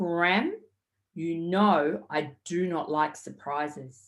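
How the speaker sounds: play-acted, deadly serious tone, low voice. Speaker retells what a boy said to him, imitating a really serious voice. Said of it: "in this really, really serious voice".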